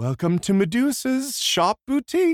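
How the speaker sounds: sickly, falsely sweet, very high-pitched voice. Pitching a scene where Madame Medusa answers the phone: sickly faux-pleasant voice. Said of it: "pleasant voice".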